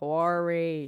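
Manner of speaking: very slow speech, words dragged out. Retelling phone calls from the Parks Department bursar, imitating Ed Feldman's slow talking. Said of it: "He was the slowest talker".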